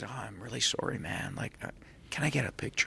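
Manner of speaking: soft, hushed whisper under the breath. Quoting the sound guy who whispered to them after a speech, retelling a whisper. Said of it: "he whispers to me".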